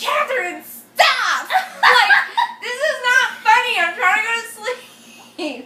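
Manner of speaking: put-on, high, very loud, fed-up angry yell. Retelling telling a friend to stop, imitating own past angry self. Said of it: "I used to get, like, mad".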